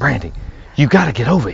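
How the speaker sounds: whispered voice.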